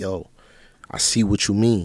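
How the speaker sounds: normal talking voice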